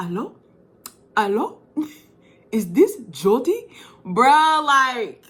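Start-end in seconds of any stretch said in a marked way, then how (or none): 0.0-3.7 swooping French dubbed character voice. Recalling a scene played back in french, voicing a caller in a french dubbed voice. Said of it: "in the French voice was like".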